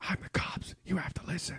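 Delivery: soft, unvoiced whisper. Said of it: "he's whispering".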